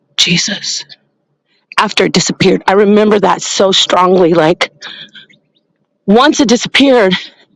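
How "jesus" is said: small, breathy little whisper. Recalling the moment the thing disappeared: whispered Jesus. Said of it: "I just let out this little whisper like this".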